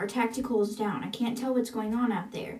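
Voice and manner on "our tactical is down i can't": plain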